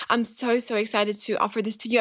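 ordinary talk

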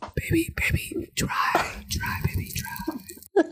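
slow, soft put-on whisper. Asked to whisper for the rest of the recording: put-on whisper.

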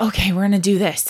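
ordinary talk

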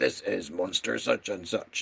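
machine-like, robotic announcer voice. Recalling the voice that described monsters from an old episode, robotic voice. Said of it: "this like robotic voice was like".

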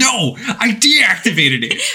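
mock very high, drawn-out, exasperated frustration. Recounting a Metal Gear scene, voicing his reply, mock-frustrated. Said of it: "You can hear the frustration in his voice".

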